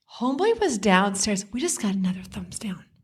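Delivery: ordinary delivery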